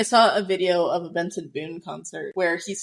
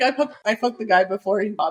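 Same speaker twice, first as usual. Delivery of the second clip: ordinary delivery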